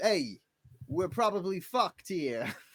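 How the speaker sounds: high-pitched fake Brooklyn accent. The game narrator voices an elk speaking to the players, Brooklyn accent. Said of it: "it's definitely gonna be the Brooklyn accent".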